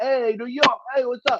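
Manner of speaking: very high, ridiculous cartoony New York accent. Retelling how the speaker's uncle called someone over for a photo: cartoony New York accent. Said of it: "ridiculous, cartoony with it".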